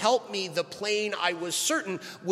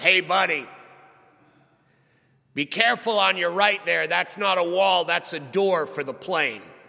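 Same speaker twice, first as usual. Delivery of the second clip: loud, words pushed past a chewed cigar; 5 dB louder than usual. Retelling a seaplane pilot warning him during takeoff, as if chewing a cigar. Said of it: "practically with a chewed cigar in his mouth".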